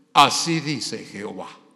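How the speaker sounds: sepulchral put-on voice. Imitating how prophets talk, a put-on voice from beyond the grave. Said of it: "ponen una voz así todo eh, como de ultratumba".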